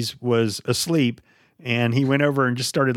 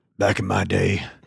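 voice pushed deep with added grit; 5 semitones lower than usual. Trying out a very deep voice at the other speaker's request: deep gritty voice. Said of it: "You're just adding grit to it to make it sound deeper".

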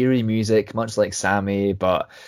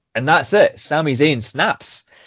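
plain

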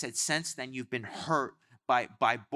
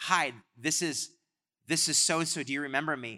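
plain

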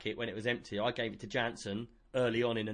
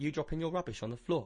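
ordinary talk, nothing marked

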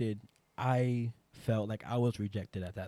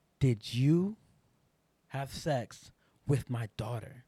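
imitated crying, tearful voice; 2 semitones higher than usual. Retelling a mother's question at the front door: imitating someone crying. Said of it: "while she's crying".

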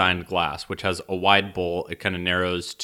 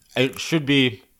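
higher-pitched, chewing, talking with mouth full; 6 semitones higher, 4 dB louder than usual. Answering in a conversation while eating chips, talking while eating chips. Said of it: "Sorry, I'm eating chips".

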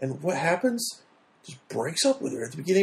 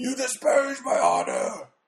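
rough, gravelly yell, high with swooping pitch; 8 semitones higher than usual. Describing a movie character who is always yelling, doing Sato's gravelly yell. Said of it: "And it's always very gravelly".

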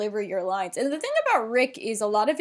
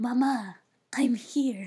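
put-on breathy dying voice, slower; 2 semitones higher than usual. Describing a play scene, acting out a line in a mock-breathy dying voice. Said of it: "in a breathy voice going".

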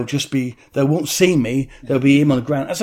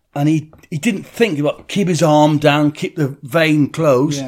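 ordinary talk

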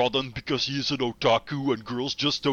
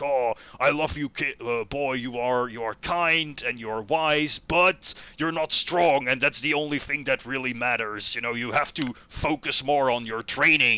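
patronizing, talking-down royal king tone. Retelling how the loving king speaks to his son: imitating a patronizing king. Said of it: "has this sort of, like, patronizing edge".

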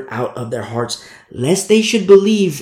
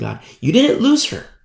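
normal talking voice

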